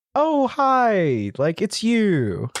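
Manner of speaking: fake friendly surprise, high, slow and drawn out.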